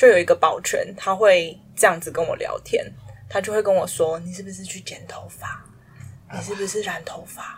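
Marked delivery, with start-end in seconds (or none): 4.2-7.6 soft-spoken, near whisper. Retelling what a building security guard used to say: imitating someone speaking quietly. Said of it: "这么小声？".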